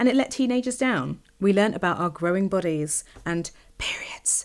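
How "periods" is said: hushed, low whisper. Recalling school sex education, doing as the teacher did: whisper the word periods. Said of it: "I whispered the word periods".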